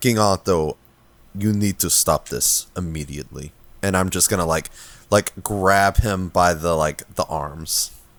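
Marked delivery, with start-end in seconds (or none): 0.0-3.5 threatening tone, lower. Speaking in character to a king in a game: intimidating voice. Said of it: "in a very intimidating, uh, voice".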